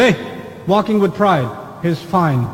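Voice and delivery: ordinary delivery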